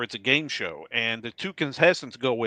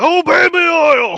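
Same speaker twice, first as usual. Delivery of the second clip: high, loud, slow giant-voice yell. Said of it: "And Andre would yell at him".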